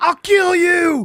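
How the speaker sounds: very loud, very high, shrill screaming yell. Retelling what was yelled at Kenny while he was pitching, imitating Stevie yelling. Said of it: "Stevie was yelling at him like".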